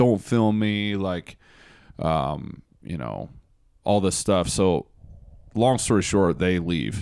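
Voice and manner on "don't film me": put-on heated, angry, threatening screaming. Retelling how the driver reacted to being filmed: imitating someone screaming. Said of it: "screaming at him, threatening him".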